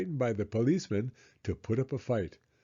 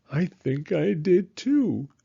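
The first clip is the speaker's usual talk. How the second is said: trembling, wavering, quivery voice, high and slow; 7 semitones higher, 4 dB louder than usual. Reading a story aloud, a frightened thief answering: quivery voice. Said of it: "said Max in a quivery voice".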